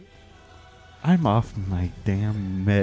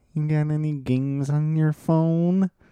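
mock snot-nosed kid voice, much higher; 7 semitones higher than usual. Raging at Todd, the speaker mimics him as a snot-nosed kid: imitating a snot-nosed kid. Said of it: "you are that fucking snot-nosed kid saying".

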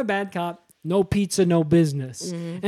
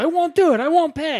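put-on New York accent, pitched up; 9 semitones higher, 4 dB louder than usual. Retelling a story, voicing a woman in it, with a put-on New York accent. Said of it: "She starts doing a New York accent too".

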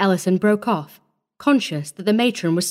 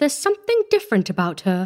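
plain

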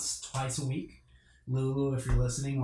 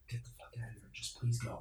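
hushed voice, much quieter; 10 dB quieter than usual. Retelling what people were heard saying, hushed voice. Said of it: "you could hear the hushed voice of".

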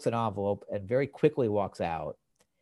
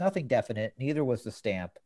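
ordinary talk

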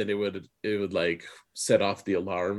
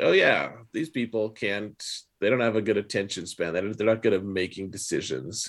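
usual speaking voice

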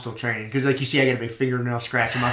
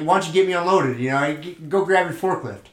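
mock joking, sarcastic teasing tone; 4 semitones higher than usual. Retelling ribbing a regular customer: imitating sarcastic ribbing. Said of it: "sarcasm relies heavily on facial expressions".

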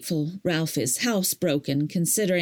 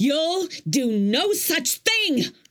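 very high, drawn-out, furious shriek; 10 semitones higher than usual. Screaming into the phone at a caller who is bothering her: screaming. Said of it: "I screamed into the phone".

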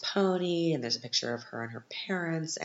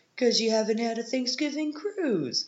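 put-on Boston-Long Island accent, much higher pitch; 11 semitones higher than usual. Retelling Joey Buttafuoco's reply to her, in a Joey Buttafuoco impression with Boston-Long Island accent. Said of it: "kind of got this Boston and then yet Long Island accent".

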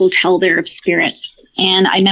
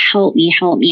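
put-on desperate, crying voice. Retelling a possession, quoting a woman's voice: imitating a desperate cry for help. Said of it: "her voice was crying for".

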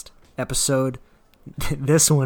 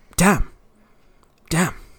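blurted out loud and high; 5 semitones higher, 5 dB louder than usual. Doing a favorite line as an impression: Gordon Ramsay impression. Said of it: "you ready for my Gordon Ramsay impression?".

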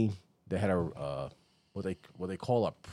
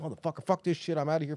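mock whiny cursing, higher, faster; 7 semitones higher than usual. Retelling guys walking back up the hill, imitating them cursing. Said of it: "walking back up the hill cursing".

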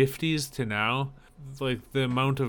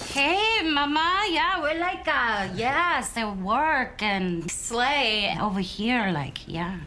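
put-on heavy Spanish accent, higher; 11 semitones higher than usual. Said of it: "like, this, like, [name] from the Block voice".

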